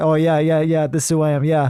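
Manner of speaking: put-on breezy, nonchalant, laid-back, too-cool show-off tone. Imitating foreigners who act much cooler around japanese people: imitating someone acting cool. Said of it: "they act much cooler".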